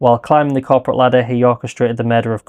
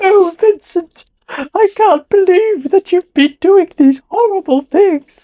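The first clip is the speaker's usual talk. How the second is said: bad put-on old lady voice, very high; 4 dB louder than usual. Recalling a memorably bad performance of an old lady: bad fake old-lady voice. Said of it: "sounds like a dude doing an impersonation of an old lady ... It's something like that".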